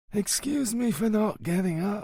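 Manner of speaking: feeble, faint voice, very high pitch. Reading a novel aloud, a frail old man apologizes: faint voice. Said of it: "said Don Balduccio in a faint voice".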